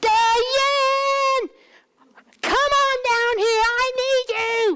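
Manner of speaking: very high, very slow yell, name drawn out. Retelling how she was called from the bottom of the stairs: imitating her yelling. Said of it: "she used to yell at me like I was 4".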